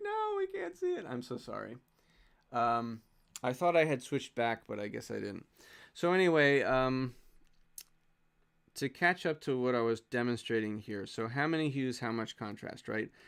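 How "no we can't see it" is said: mock shrill shout, very high. Retelling what viewers in chat said about a hidden drawing: imitating chat shouting. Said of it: "you're all shouting at me like".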